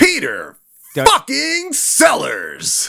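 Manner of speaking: swooping announcer-style delivery. Trying a voice on a name that comes out not jersey enough, more a game show voice. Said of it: "That was more game show".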